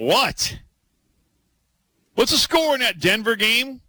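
stunned disbelief.

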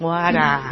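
mocking, overdone, exaggerated Boston accent. Imitating how film actors overdo the local accent: overdone Boston accent. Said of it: "they'll make it sound worse".

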